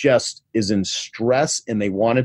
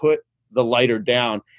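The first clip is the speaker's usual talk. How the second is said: plain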